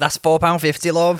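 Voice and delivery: cheery, friendly Liverpool Scouse accent.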